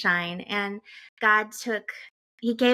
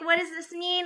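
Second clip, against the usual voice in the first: high-pitched, tearful, helpless crying voice; 9 semitones higher than usual. Retelling a panicked phone call to the husband: imitating own past crying.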